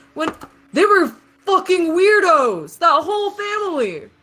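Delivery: put-on very high, loud, drunken ranting outburst. Retelling what one of the guys said, imitating a drunk man. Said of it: "He's had a bit too much to drink".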